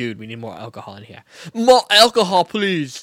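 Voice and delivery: very loud, swooping, sing-song put-on Belgian accent. Imitating Belgians while talking about strong beer, Belgian accent. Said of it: "you nailed that accent".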